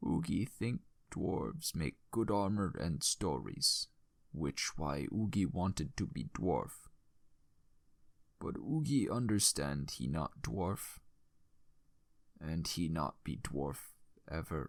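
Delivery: soft, weak, failing, broken dying voice. Storyteller voices the troll smith Oogie just before his breath slows: dying Oogie voice. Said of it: "The tale of a troll who crafted armor for his friends. / [name]'s breath began to slow, and [name] grabbed his hand, holding it as best as he could. / our party lost [name] the crafting smith. / [name".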